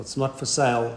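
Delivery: ordinary talk, nothing marked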